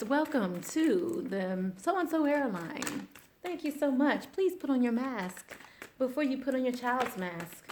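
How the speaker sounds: courteous, polite flight attendant announcement voice. Speaker shows off a stewardess voice with a mock airline announcement. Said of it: "That's my stewardess voice".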